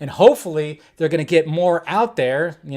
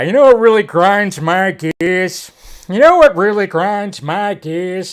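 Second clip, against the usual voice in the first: loud, deliberately bad cartoon-dad voice; 3 semitones higher, 5 dB louder than usual. Talking about a trailer that's already out, break into a terrible Peter Griffin impression. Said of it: "my terrible Peter Griffin impression".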